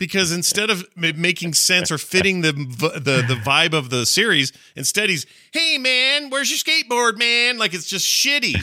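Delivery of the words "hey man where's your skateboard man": very high, mocking put-on cartoon voice. Complaining about how a game character was voiced, imitating Sonic's voice. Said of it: "give a voice to Sonic".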